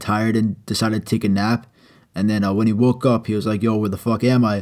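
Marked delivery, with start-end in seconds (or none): none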